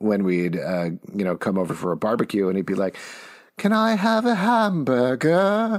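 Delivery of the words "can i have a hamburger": very high, slow British cartoon accent. Retelling how a young cousin asked for a hamburger at a barbecue, Peppa Pig accent. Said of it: "adopted a Peppa Pig accent".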